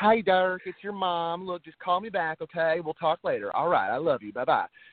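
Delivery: put-on sweet, drawled Southern accent. Imitating the speaker's mom leaving a phone message: imitating mom's Southern accent. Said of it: "She has that real Southern accent".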